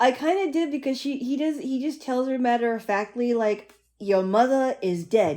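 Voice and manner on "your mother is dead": put-on British accent, louder and slower. Describing a movie scene, quoting Humbert matter-of-factly in Humbert's British accent. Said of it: "in his British accent".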